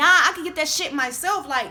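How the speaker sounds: angry, rising loud voice. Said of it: "So I start getting loud".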